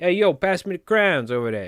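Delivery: put-on New York accent, crayons pronounced like crowns. Speaker showing how New Yorkers would ask for something, New York accent. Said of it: "As a New Yorker, we should be saying crowns".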